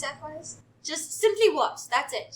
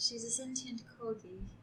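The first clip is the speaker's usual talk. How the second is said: in-character whisper, lower and quieter; 4 semitones lower, 12 dB quieter than usual. Leaning in to tell another character a secret: whispering in character. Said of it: "I lean in and I whisper".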